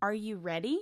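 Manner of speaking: rising question tune, pitch goes up on ready. Teaching question intonation, an example question with rising intonation on "ready". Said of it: "In questions, your voice goes up".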